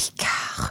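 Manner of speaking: soft, sultry, breathy seductive whisper. Imitating a sultry female voice that whispered a name: imitating sultry whisper, picard. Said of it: "super sultry female voice and she would kind of whisper the name".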